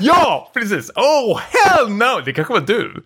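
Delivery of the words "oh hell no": mock scream, much higher, slower. Retelling a moviegoer screaming in the cinema: retelling a scream. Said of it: "han skrek".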